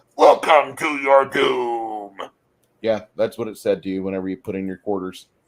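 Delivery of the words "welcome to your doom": loud, very slow, drawn-out arcade villain voice. Recalling an old arcade game's greeting, the speaker does the Altered Beast cabinet voice. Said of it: "it's from the old Altered Beast Sega cabinet".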